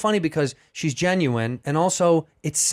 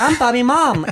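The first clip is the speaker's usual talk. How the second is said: mocking teasing voice; 8 semitones higher, 6 dB louder than usual. Retelling going viral mocking each other's moms: imitating Bobby's mom. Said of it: "I just went cross-eyed and I was like".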